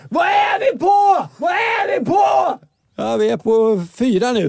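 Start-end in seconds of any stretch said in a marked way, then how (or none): 0.1-2.5 put-on very high, eager, excited children's shrieking. Preschool worker retelling children cleaning the yard, imitating kids screaming. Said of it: "och skrek".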